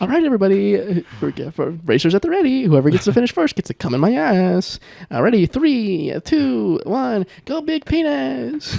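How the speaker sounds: put-on high, loud, exaggerated camp voice.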